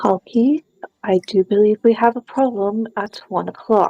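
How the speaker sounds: very quiet, discreet, hushed murmur. Warning Kalki in character about a problem: speaking very quietly. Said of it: "I will very quietly say".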